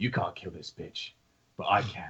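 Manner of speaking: low, muttered aside under the breath. Voicing a player character before an attack: muttered under his breath. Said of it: "realizes under his breath".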